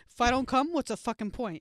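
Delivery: put-on New York accent, loud and high. Repeating another speaker's line back to her: put-on New York accent. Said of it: "I gave you a New York accent for that".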